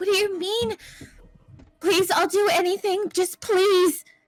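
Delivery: put-on high, desperate, begging, pleading tone. Voicing a character begging the lady: desperate pleading in character. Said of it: "he's like".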